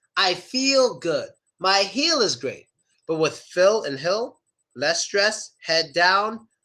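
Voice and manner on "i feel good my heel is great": ee vowel stretched in feel, heel. Teaching the E vowel sound, the speaker demos a higher-pitched smiling voice. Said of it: "make a higher pitched voice".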